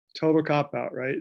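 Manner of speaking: ordinary delivery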